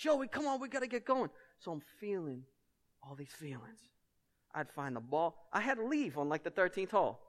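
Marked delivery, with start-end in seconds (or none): 0.0-1.3 high-pitched yelling call. Recounting a round of golf where a companion yelled at the speaker; retelling a yell. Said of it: "he starts yelling at me like".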